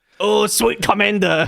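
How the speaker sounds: exaggerated put-on Chinese accent. Joking about a God Knight title with another speaker, put-on Chinese accent. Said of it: "What was the accent?".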